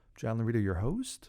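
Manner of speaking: upward lilt, pitch rising at the end of host. Host repeating his own self-introduction, rising question intonation on host. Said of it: "I don't know why I said that with a question".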